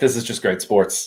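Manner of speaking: ordinary talk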